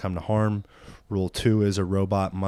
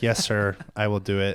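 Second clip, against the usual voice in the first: mechanical robot voice. Acting out a robot answering the man giving it orders, in a robot voice. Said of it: "And it's like".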